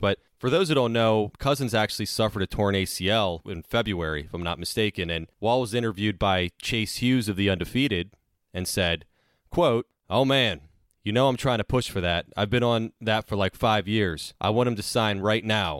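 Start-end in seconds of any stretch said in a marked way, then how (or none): none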